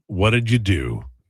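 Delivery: mock, really condescending put-on tone. Acting out how he starts, the way a son would, in a mock-condescending way. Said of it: "Like in a really condescending way".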